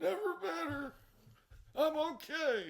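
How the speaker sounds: very high and very slow, holding back tears. Retelling answering a worried dad after a fall: imitating choking back tears. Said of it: "I'm here choking back tears".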